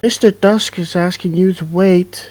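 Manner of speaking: put-on very high-pitched young child's voice. Game master voicing a child heard among whispering voices, young child's voice. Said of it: "A young child's voice goes".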